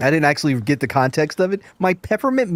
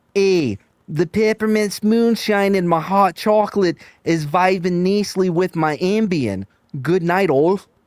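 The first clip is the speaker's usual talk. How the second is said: bad put-on Chicago accent; 3 semitones higher than usual. Reading out an anonymous ten-dollar donation message, in a put-on Chicago accent. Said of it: "That was my Chicagoan accent".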